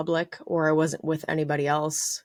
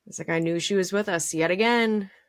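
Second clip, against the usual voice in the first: usual speaking voice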